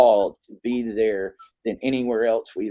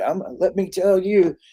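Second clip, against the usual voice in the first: put-on, impassioned, high, fired-up hollering yell; 9 semitones higher than usual. Retelling a man screaming into a microphone in Baltimore streets: imitating Eugene screaming. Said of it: "he was out there just screaming".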